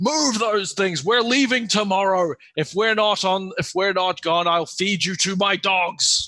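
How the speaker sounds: shouting orc voice. A storyteller voices an unseen figure yelling orders, loud yell in Orcish. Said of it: "You hear a loud voice yell in Orcish".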